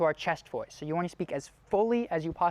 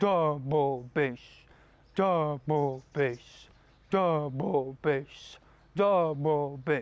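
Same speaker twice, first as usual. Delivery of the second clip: lowest register, from the gut, much slower; 3 semitones lower than usual. Leading a voice exercise, as low as possible. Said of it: "speak down here from your gut... put it as low as you can in your register".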